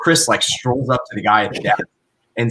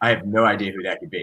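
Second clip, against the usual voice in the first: soft, bone-dry deadpan, giving nothing away; 2 semitones lower, 5 dB quieter than usual. Retelling what a guy said when Chris couldn't remember, imitating a deadpan delivery. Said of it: "the guy with the deadpan face goes".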